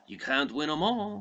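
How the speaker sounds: put-on high-pitched old man voice. Recapping a plot, speaker quotes Al Pacino's line, Al Pacino impression.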